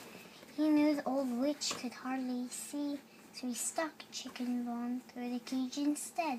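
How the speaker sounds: ordinary delivery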